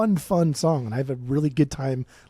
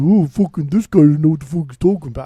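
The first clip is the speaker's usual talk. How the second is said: acted, loud, irate, dismissive know-it-all voice; 8 dB louder than usual. Imitating an irate listener who complains about the speaker: imitating an irate listener. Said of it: "get all his asshole and be like".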